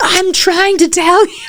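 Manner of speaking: acted yelling. Voicing nature trying to guide people: voicing nature yelling. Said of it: "it doesn't actually yell. That's me".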